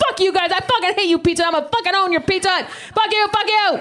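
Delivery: shrill, very high-pitched, angry yelling. Recounting yelling at the Pizza Hut person on the phone, retelling the yell. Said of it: "I'm yelling at this poor person on the other line".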